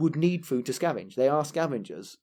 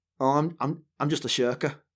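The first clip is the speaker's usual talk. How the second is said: put-on heavy north of England accent. Quoting a woman from the north of England, in a northern English accent. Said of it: "she said this in a very north of England way".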